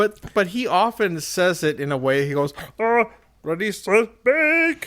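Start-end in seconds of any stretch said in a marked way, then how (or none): 2.8-4.9 high, pinched, slowed, drawn-out voice. Imitating how he says the show's line: high pinched Sean voice. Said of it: "it's basically the Sean voice".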